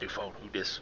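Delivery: secretive, soft whisper up close. Leaning close to a magic coin to whisper to the others: whispering into a coin. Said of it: "lean in close and whisper into it".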